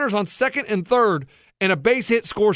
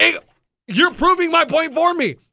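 high-pitched, heated, angry yelling; 7 semitones higher than usual. Arguing about bunting with another speaker: yelling. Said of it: "because you're yelling".

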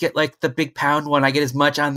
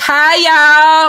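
put-on Texas accent, much higher, louder; 12 semitones higher, 8 dB louder than usual. Guessing how she talked last night after going completely texas, in a put-on texas accent. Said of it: "we went completely Texas last night".

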